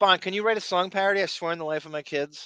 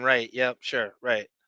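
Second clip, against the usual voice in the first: put-on patronizing, condescending, dismissive tone; 6 semitones lower than usual. Retelling how Doug Donovan reacted: imitating Doug Donovan condescendingly. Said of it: "condescendingly saying".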